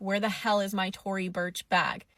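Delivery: normal talking voice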